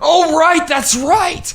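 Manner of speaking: very high, loud, excited, delighted shriek.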